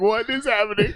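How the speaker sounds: mock voice gripped by panic, alarmed. Teasing the listener about their reaction to a loud problem, imitating their panic. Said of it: "The panic in your voice".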